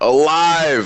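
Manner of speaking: very high, long-held, drawn-out yell. Yelling a call to allies in a tabletop game: yelling. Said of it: "I'm gonna yell".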